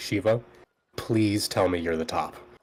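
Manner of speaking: low, grave, deadly serious voice. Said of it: "she gets, like, really serious".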